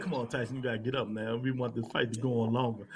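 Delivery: hushed whisper. Retelling what someone said in tyson's ear: imitating a whisper. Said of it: "He whispered in his ear".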